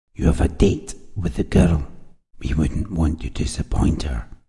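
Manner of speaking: hushed, low, veiled menace, near whisper. He tells Tom where they are headed, low, with an implicit threat. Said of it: "His voice was low, the threat implicit".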